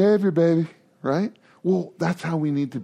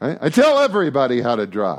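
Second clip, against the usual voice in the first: ordinary delivery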